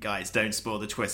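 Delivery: ordinary delivery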